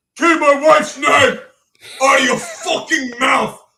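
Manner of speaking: loud, booming, very slow primitive caveman voice. Retelling what Will Smith said at the Oscars: caveman-like Will Smith imitation. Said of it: "like a caveman".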